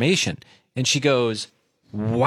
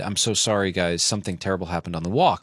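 put-on grave, very serious tone, lower; 6 semitones lower, 4 dB quieter than usual. Retelling what the dog walker said on coming home: imitating someone speaking very seriously. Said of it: "very seriously said".

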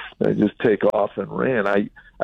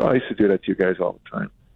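casual, offhand, matter-of-fact, swooping tone. Retelling the father's reply to a question, imitating a matter-of-fact tone. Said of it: "he said it so matter-of-factly".

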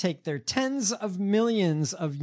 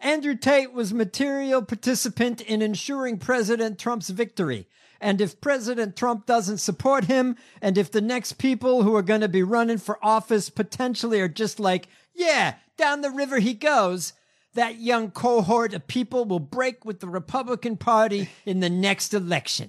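put-on New York accent, pitched up; 5 semitones higher than usual. Quoting a lawyer's statement to Vanity Fair, in a put-on New York accent. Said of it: "I'm going to give him a New York accent".

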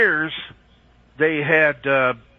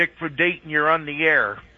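ordinary delivery

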